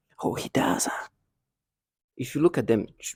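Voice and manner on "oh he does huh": hushed, breathy whisper under the breath. Retelling what they whisper to the speaker: imitating a whisper. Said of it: "they whisper things like that".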